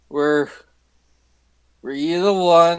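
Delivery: put-on acted drunk voice. Voicing a drunk character squinting at a thug: acting drunk. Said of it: "I'm saying this in my drunken state".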